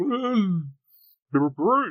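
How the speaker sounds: very high, slow, acted, through a full mouth. Retelling answering the radio host with a mouthful of cookies: acting out talking with a full mouth. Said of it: "with a mouthful of cookies".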